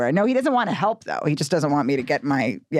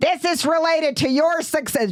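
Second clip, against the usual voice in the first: mock scolding scream in a higher pitch; 14 semitones higher than usual. Retelling an aunt's complaints about a suitcase: imitating someone screaming. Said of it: "she's screaming at me about my suitcase".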